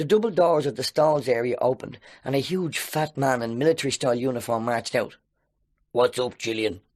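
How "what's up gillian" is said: rough, gravelly voice. Reading a story aloud, voicing a large usher: gravelly voice. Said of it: "he asked in a gravelly voice".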